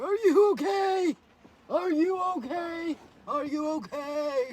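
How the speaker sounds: very slow worried dog voice, "okay" stretched long. Voicing the dogs, who look concerned at the speaker: voicing concerned dogs. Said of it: "The dogs are looking very concerned".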